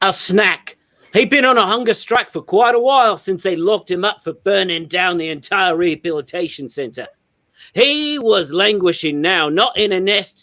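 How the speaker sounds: quick, rattled-off put-on Australian accent. Taking a turn in a group story everyone must tell in accent: Australian accent. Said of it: "perform in a uh, Australian accent".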